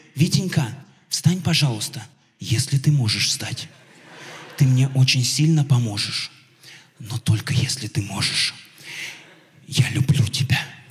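put-on gentle, affectionate, respectful voice, low, tender, calm. Retelling how she asked him to get up, imitating a tender, calm voice. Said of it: "она говорит нежно, ласково, спокойно".

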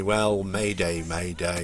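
deadpan, calm, flat, bored monotone, no panic. Recalling putting out a mayday with no panic at all: acting bored, no panic. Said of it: "there's no panic in my voice at all, you know, the sort of, oh, boringly".

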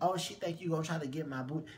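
plain

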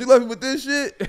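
put-on whiny complaint.

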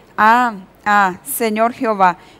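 ordinary delivery

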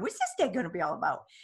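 put-on doting, cooing baby-talk voice. Retelling what the speaker says at the window, in cooing baby-talk voice. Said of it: "in my baby voice that I talk to her".

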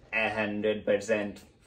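ordinary delivery

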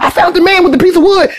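very high, frantic, rattled-off panicked gabble. Acting out Joe calling in on the radio, Joe talking too fast. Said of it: "You talking too fast".

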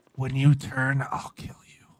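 whispering. Streamer in a game, whispering to Marlon over proximity chat; whispering. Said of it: "now that I'm whispering".

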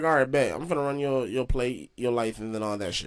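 ordinary delivery

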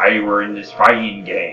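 put-on pirate voice. Repeating what a game's pirate character said: imitating a pirate character. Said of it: "I'm just gonna say what he said. He says".

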